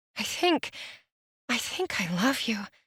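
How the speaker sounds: soft, close, hushed murmured whisper. Narrating a kiss, the reader voices her line, whispering. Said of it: "she whispers against my mouth".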